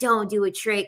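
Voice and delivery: put-on angry, scolding voice. Retelling what the annoyed instructor said after an unshown trick: imitating an angry instructor. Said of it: "she was pissed".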